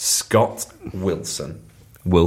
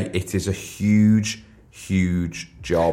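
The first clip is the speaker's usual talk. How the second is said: very slow, drawn-out emphasis on every word. Describing the jobs being created this week, very slowly. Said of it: "always say that very slowly".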